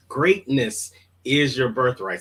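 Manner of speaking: plain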